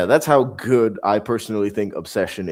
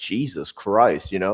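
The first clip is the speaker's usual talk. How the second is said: ordinary talk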